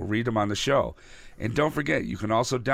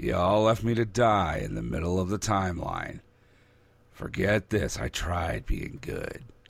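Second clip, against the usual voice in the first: low-pitched comic-book anti-hero character voice; 6 semitones lower than usual. Imagining the villain coming back on the Flash show: Captain Cold voice. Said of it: "I like your Cold voice".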